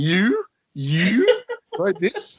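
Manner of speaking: high, slow, disbelieving laughter. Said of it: "She's pointing at me and laughing".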